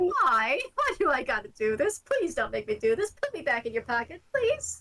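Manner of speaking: nervous, scared, pleading character voice. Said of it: "looking around nervously".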